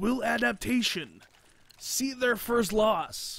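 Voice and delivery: very drawn-out, slow, high movie-trailer narration voice. A match commentator switches into the movie voice for one question. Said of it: "the movie voice".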